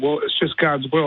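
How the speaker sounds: ordinary talk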